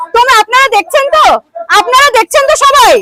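angry, high-pitched shouting.

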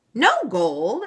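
astonished, disbelieving, loud, truly shocked cry. The leprechaun reacts to Meg's wish for no gold, truly shocked. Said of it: "looking truly shocked".

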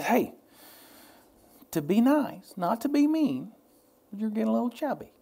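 put-on, sugar-sweet delivery. Retelling what a friend said about weight: imitating a sweet voice. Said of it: "She says it with her sweet voice".

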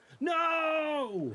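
shrill, very high, stretched-out yelled no. Reacting to news that someone is having issues: yelling. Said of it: "Why are you yelling?".

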